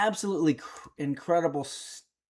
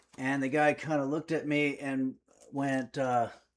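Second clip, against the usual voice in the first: ordinary talk, nothing marked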